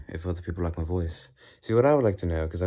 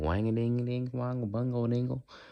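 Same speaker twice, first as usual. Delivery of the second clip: high, annoying country twang. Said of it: "a little twang-a-dang".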